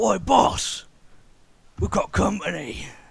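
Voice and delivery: creaky, rough-edged, high, slow orc voice. Voicing orcs who spot the party around the corner: orc voice. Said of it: "you see a pair of orcs like".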